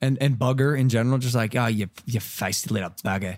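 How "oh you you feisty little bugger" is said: put-on slipping into Australian accent. Trying out British slang words, slipping into an Australian accent. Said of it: "you kinda went Australian on that again".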